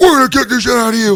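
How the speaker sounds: gruff, very high, pushed-out promo-style voice. Retelling a wrestling tag team promo, imitating Animal's gruff promo voice. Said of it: "like that gruffy".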